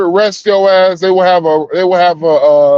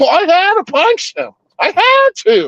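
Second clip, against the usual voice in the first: over-the-top exaggerated voice, very high with swooping pitch; 12 semitones higher than usual. Explaining to an officer why they punched someone, in the whitest voice possible. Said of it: "the whitest voice I can".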